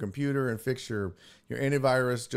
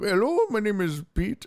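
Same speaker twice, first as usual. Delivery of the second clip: real thick put-on Indian accent, pitched up; 8 semitones higher, 4 dB louder than usual. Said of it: "that real thick Indian accent".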